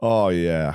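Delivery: Canadian bro-style club DJ voice. Retelling a night out, imitating a canadian bro dj. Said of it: "Occasionally you just hear him like".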